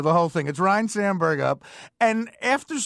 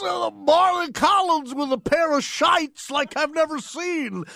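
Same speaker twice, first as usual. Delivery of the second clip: put-on drunk announcer voice, pitched higher; 7 semitones higher than usual. Retelling a drunk announcer's on-air call: imitating drunk Harry Caray. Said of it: "He goes".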